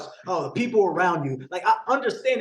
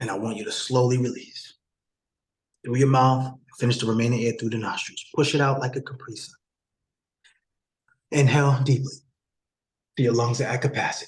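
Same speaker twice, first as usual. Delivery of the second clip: much lower, deeper voice; 8 semitones lower than usual. Speaker guides listeners through a breathing exercise: a bit deeper voice. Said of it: "Y'all hear the voice getting a little bit deeper".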